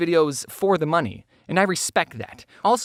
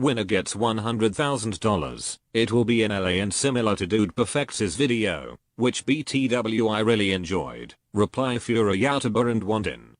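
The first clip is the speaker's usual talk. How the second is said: robotic text-to-speech voice, lower; 10 semitones lower, 3 dB quieter than usual. Reading a tweet aloud, continuing in a computer voice. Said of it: "I'm just gonna use a computer voice".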